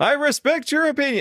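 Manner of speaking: put-on, very high-pitched shouted delivery. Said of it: "I just yell at the end of it".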